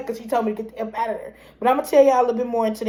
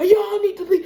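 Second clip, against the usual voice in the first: play-acted angry shout, full force, pitched up; 8 semitones higher, 4 dB louder than usual. Retelling what a son said during a confrontation: imitating someone yelling. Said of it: "He was yelling, raging".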